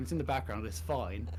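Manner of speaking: plain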